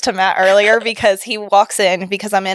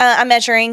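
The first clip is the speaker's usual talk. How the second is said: normal talking voice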